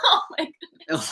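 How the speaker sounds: breathy whisper, laughing under the breath. Hearing someone say their weight for a fitness form, react laughing while talking. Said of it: "Why are you laughing?".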